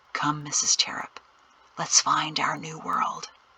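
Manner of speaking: hushed, whispered words. Reading a story aloud, a character speaks into her ear: whispering. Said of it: "he whispered in her ear".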